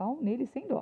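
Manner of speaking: high, thin-voiced shout. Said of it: "Aí tem uma voz fina que grita".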